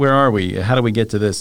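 plain

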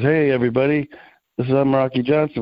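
normal talking voice

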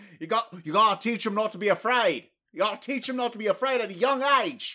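Australian accent throughout. Advising to teach him not to be afraid, in an Australian accent. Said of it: "You should just shelve that Australian accent".

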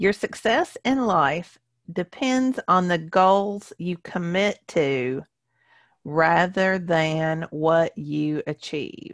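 slow, measured, deliberate, each word landing. A speaker giving their second point so it sinks in, speaking slowly. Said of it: "I said that slowly because I want it to sink in".

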